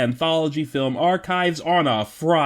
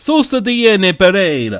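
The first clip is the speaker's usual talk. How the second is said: loud, raised, put-on stage Italian accent; 5 semitones higher, 8 dB louder than usual. Giving a film's title another way on the show, Mamma Mia pronunciation. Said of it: "doing the Mamma Mia pronunciation".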